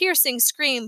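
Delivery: plain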